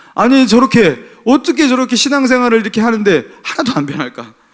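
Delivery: frustrated, angry, pitched high. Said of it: "그러면서 화가 많이 났었거든요".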